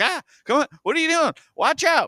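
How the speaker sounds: shrill, very high, urgent yelling. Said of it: "screaming at the book like you would scream in a movie".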